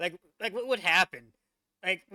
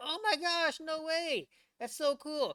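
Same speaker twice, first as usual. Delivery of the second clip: mock, very high, gushing, thrilled kid voices; 10 semitones higher than usual. Imagining the Challenger teacher telling her students about space, imitating excited kids. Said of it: "your kids are all excited".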